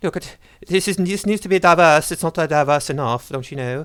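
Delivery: high, mocking, put-on English accent. Imitating a man who is doing an English accent, mocking English accent. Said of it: "Maybe I can do do an English accent of him".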